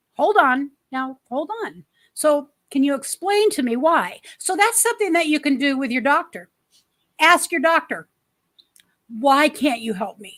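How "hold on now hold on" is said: acted, calm, steady, soothing tone. Retelling how they calmed down a man who said he couldn't help, retelling a calming tone. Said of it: "And I calm him down".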